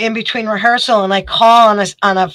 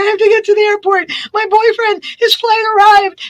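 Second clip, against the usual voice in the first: mock hysterical sobbing with very high voice; 12 semitones higher, 3 dB quieter than usual. Telling a story about being pulled over on the way to an airport, acting out her frantic crying, imitating hysterical crying. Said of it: "I'm hysterical crying".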